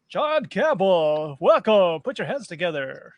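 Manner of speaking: put-on radio announcer on-air host voice. Host welcomes a returning guest and asks for applause, radio announcer voice. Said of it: "I'm working on my radio voice".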